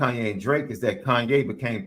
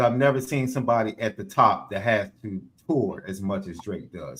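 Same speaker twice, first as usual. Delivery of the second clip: ordinary talk, nothing marked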